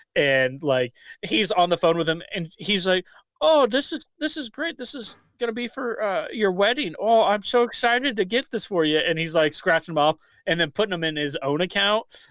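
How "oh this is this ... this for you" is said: high, put-on old-grandma voice. Retelling a man faking a phone call while buying gift cards, in an old grandma voice. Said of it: "makes him sound like he's an old grandma".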